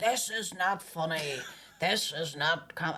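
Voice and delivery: slow, drawn-out, deadly serious voice. Retelling a man at a bar refusing a joke: Ian Paisley voice. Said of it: "he sounded like him".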